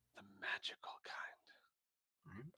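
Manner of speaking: quiet put-on hushed voice. Role-play scene, Jarlaxle answers Usam's question about traps, lowering his voice. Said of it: "Jarlaxle lowers his voice".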